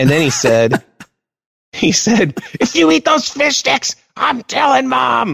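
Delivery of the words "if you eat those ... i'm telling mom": acted-out screaming yell. Recounting what someone screamed in the speaker's face, retelling a scream. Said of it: "and then he screamed in my face".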